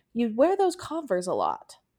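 tender, careful, very gentle sing-song voice. Retelling how he answered a question about shoes, imitating a very gentle reply. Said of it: "He very, very, very gently replied".

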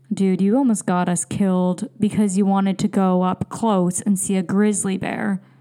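normal talking voice

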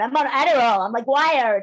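put-on American accent. Imitating people on American programs, in an American accent. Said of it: "I thought that was a good American accent".

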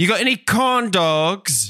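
put-on little British kid voice. Answering a question about american candy from a british kid: little british kid voice. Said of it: "sound weird coming from a little British kid".

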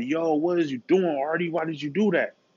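high, tearful crying voice, mid-sob. Retelling a prank on a little person, imitating someone crying. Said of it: "crying like".

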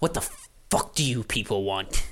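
absolutely furious. The Golem Guild enforcer sees the three of you, absolutely pissed. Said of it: "And she's absolutely pissed".

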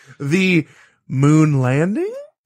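pitch rising at the end on landing. Asking about tonight's moon landing, with rising pitch on landing. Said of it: "You see how I went up at the end there? That signifies a question mark?".

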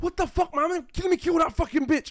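very high, loud, enraged furious scream. Retelling a sibling fight with parents in the middle: imitating a screaming sibling. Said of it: "the siblings screaming".

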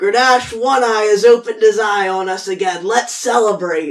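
very loud, high, acted yell. A player in a tabletop game speaks as their character, shouting. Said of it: "I'm shouting".

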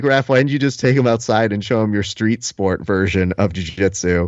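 plain

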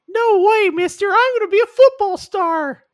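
put-on high cartoon boy voice. Parodying a movie trailer, voicing the short kid's reply in a Pinocchio voice. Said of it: "unintentional Pinocchio impression".

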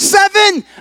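high, loud excited blurt. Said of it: "Johnny so excitedly said again".

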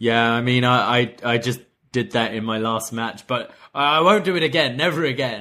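sheepish, stammering delivery. Retelling a wrestler's reply about head drops: imitating Chris Jericho sheepishly. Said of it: "Jericho sheepishly is like".

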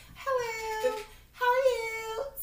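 polite, proper phone voice, soft and slow.

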